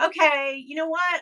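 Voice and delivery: sarcastic-sounding. Retelling own reply to an Etsy seller after changing a rating: retelling own sarcastic words. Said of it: "I'm being sarcastic about the whole thing".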